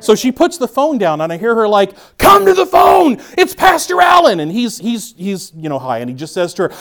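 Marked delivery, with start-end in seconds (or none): 2.2-4.4 very high, rough hollering yell. Retelling how a mother yelled for her son to take a call, imitating someone yelling. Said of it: "a family that constantly communicates by yelling".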